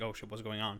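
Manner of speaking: hushed, mildly panicked, rattled, alarmed tone. Retelling a film scene during a power outage: imitating Keller panicking. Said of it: "Keller's kinda, like, panicking a little bit".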